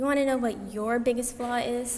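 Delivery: ordinary delivery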